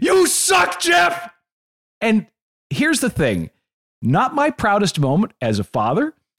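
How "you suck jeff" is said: very high, full-throated scream. A father recalls screaming at a man during a break in the music, retelling a scream. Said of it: "and I screamed".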